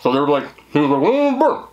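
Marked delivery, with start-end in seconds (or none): 1.0-1.7 very high, garbled mumbling as if mouth full. Retelling a man answering a question while eating peanut butter: imitating mumbling with mouth full. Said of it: "He was talking like this".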